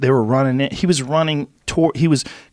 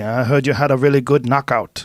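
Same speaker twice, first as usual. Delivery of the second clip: put-on thick, laid-on-heavy Korean accent. Retelling what his instructor said to him after the tournament, in a thick Korean accent. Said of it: "with his thick Korean accent".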